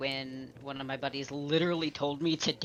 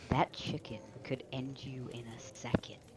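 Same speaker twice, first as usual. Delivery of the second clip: grave, serious, soft voice, deliberately lowered; 2 semitones lower, 6 dB quieter than usual. Voicing Paul answering a jab about a chicken man: lowered serious voice. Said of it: "just lower his voice and just be like".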